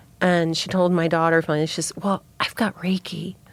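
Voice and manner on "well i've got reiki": hushed, confiding, secretive undertone. Retelling what the preschool teacher told the daughter: imitating a secretive half-whisper. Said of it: "She was kinda whispering it like it was a secret".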